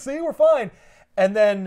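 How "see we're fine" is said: acted, very high, jittery, nervous laughing voice. Retelling how someone reacts when the clock strikes midnight: imitating a nervous laugh. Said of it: "he has this nervous laugh where he's like".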